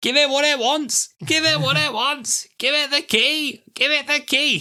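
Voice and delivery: very high squawking parrot voice. Retelling what a man kept saying, in a squawky parrot-like voice. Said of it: "sound like a parrot that's asking for a cracker".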